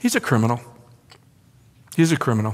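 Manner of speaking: put-on patronizing tone, slow and spelled out. Repeating the leaders' charge to Pilate: imitating a condescending tone. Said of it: "It's condescending".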